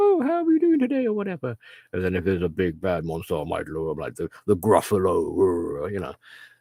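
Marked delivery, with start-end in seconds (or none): 0.0-1.1 very high put-on girl's voice. Showing how they'd read lines written by a girl, girly voice. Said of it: "start trying to sound girly and be like".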